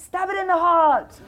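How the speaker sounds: shrill, very high, very loud, slow, drawn-out shout. Recounting what a guy shouted to the speaker, retelling the shout. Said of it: "the guy shouted to me".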